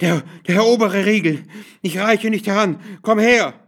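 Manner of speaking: breathless, panting, high-pitched calling out. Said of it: "rief sie keuchend".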